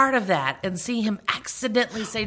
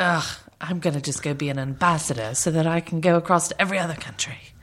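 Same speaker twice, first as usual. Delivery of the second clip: put-on snooty, haughty voice, pitched lower; 3 semitones lower than usual. Imitating Angelina the way she always is: imitating snooty Angelina. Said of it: "She always just seems a little snooty to me".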